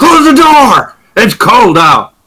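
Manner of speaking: rough, throaty, very high swooping guttural shouts. Narrating to players entering a tavern, the speaker voices the patrons, guttural voices shouting. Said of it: "in various guttural voices".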